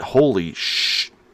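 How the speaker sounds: said under one's breath. Recalling the moment she passed, muttered under breath. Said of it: "under my breath".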